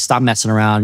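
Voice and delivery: ordinary delivery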